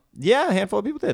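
voice shooting up very high, high and loud. Asked whether people responded to a callout for fan questions, answering with voice going up high. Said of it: "Your voice went up real high".

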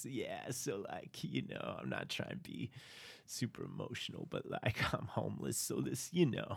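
would-be smooth, casual, charming bravado. Retelling a character thanking someone for a gift: imitating a smooth-talking guy. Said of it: "you can tell he's trying to be smooth".

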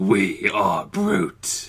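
sinister, menacing, evil villain voice. Joking about a cologne name with another speaker: mock evil voice. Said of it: "You just sound evil when you say it".

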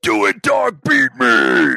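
booming, very loud, slow, drawn-out pumped football hype. Asking whether the other ever goes, pretending: football hype voice. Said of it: "get that football voice and go".

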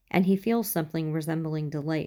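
plain

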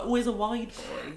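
high, put-on laddish bloke voice. Describing how girls do lad voices, the speaker mimics one in a mock lad voice. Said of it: "girls do lad voices, they're always like".

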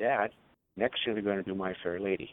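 normal talking voice

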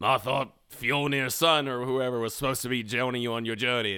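put-on raspy, hoarse English voice. Describing an actor's line from a movie, in a raspy English voice. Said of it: "just really raspy English voice".

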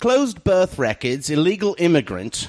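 put-on proper British accent. Reading a message from Norman Arm aloud to sound smarter: put-on proper British accent. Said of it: "So I'll read it in an English. British accent".

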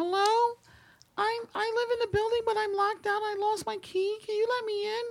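very high-pitched put-on feminine woman's voice. Retelling a voice heard asking to be let in at night: imitating a woman's voice. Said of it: "a man doing a woman's voice like you did just now".

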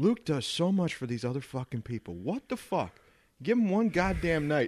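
furious, fed-up, angry ranting outburst. Quoting a man who was calling people about Jonah, retelling an angry rant. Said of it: "was so fucking mad".

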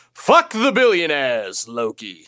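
heroic, god-like voice. Signing off a podcast episode, addressing Loki in a Thor voice. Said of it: "It's a solid Thor voice".

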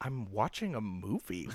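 muttered under breath. Retelling a reply after she walked out of the movie, muttered under breath. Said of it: "under my breath".

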